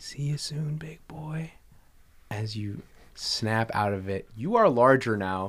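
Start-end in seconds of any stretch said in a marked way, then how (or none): 0.0-1.5 just a soft, hushed whisper. Voicing a mysterious voice in a character's mind: whispering voice. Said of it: "just whispering".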